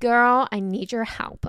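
loud put-on American accent. Reading out a listener's message on her channel, in a fake american accent. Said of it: "now we're doing American".

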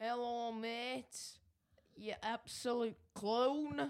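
accent from Bolton. Asked for an example of a Bolton accent, give one in a Bolton accent. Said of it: "Can you do an example of a Bolton accent".

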